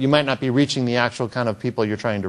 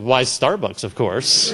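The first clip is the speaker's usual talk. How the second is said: put-on straight-faced, matter-of-fact, unhurried deadpan. Retelling own reply to a man in line: imitating own deadpan reply. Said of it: "said with a completely straight face".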